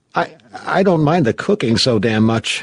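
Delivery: nervous, slightly high delivery. Clark speaks to MacReady by the galley stove, nervous. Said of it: "Clark said nervously".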